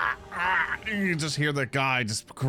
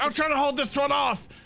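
very high, straining, shrill character yell; 12 semitones higher than usual. Voicing a bleeding fighter calling for help: yelling in character. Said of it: "you'll hear him yell".

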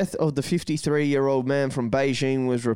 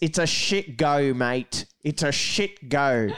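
broad put-on Australian accent. Putting it in an Australian sense for the other speaker, in an exaggerated Australian accent. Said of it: "To put it in an Australian sense".

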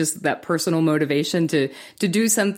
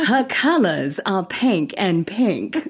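put-on strong Southern accent; 3 semitones higher than usual. Asked by the others for a line, [name] does an M'Lynn Eatenton Southern accent. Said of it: "in your best Malin Eatonton Southern accent".

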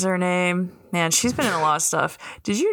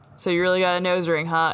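usual speaking voice

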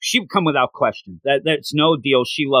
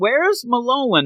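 mock piercing, very high-pitched, shrill yell; 10 semitones higher than usual. Retelling how she lays on the table and yells: imitating someone yelling. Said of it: "and then yells".

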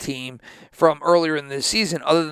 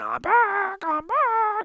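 mock very high, very slow, swooping triumphant yell. Retelling how a player took off his helmet after scoring a touchdown, imitating a player screaming. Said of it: "fucking starts screaming".

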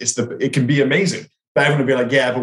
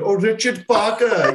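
put-on Indian accent, called out loud and pitched up; 9 semitones higher than usual. Recalling a film line heard over and over, in an Indian accent. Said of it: "that Indian accent over and over again".

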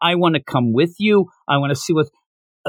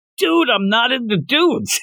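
character voice yell, much higher pitch; 7 semitones higher than usual. Recapping a scene where a fanboy is all over him; Denji yelling. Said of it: "Denji yells".

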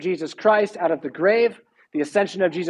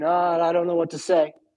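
imitated stuttering, stammering speech. Retelling the villain caught at the king's table: imitating stuttering speech.

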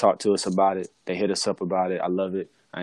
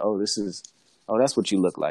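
suggestive, somewhat seductive delivery. Retelling what was said to a person at dinner: imitating own seductive tone. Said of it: "it was a bit seductive how it was said".

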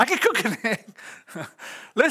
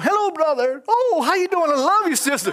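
high, sweet, over-friendly comedic voice; 7 semitones higher, 3 dB louder than usual. Acting out his own greeting at church after arguing with his wife: comedic put-on friendly greeting. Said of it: "comedic with it".

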